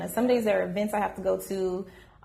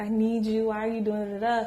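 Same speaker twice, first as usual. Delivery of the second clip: put-on, tearful, crying pleading. Retelling a boyfriend's plea in a parking lot: imitating someone crying. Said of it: "he came down crying".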